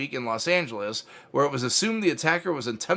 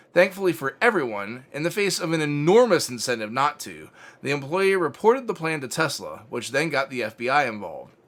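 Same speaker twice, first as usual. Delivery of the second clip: ordinary talk, nothing marked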